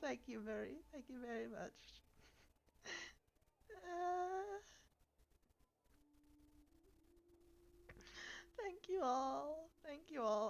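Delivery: very soft, very quiet, choked-up, tearful with joy. Speaker, emotional over their progress, thanks everyone, choked up with happy tears. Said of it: "I'm actually going to cry for a second".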